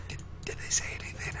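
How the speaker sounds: nervous, quick, hushed whisper.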